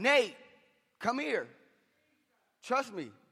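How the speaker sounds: play-acted high, swooping hollered yell. Retelling calling to their son from inside a tornado, retelling a yell. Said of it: "And I'm yelling".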